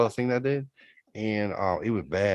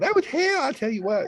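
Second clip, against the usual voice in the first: voice raised to a higher pitch. Complaining about someone after being asked to talk higher: higher pitched voice. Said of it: "do a higher pitched voice while you're doing it".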